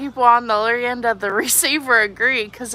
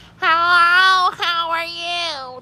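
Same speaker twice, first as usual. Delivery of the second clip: put-on very slow, high, stretched little-kid voice; 6 semitones higher than usual. Comparing her voice to another woman's, the speaker shows how she sounds: childlike kid voice. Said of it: "I feel like I sound like this".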